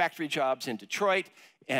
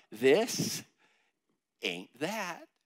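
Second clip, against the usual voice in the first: stage whisper meant to be heard. Speaker leads the audience in saying three words together, half-whispering. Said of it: "Just whisper those words out loud".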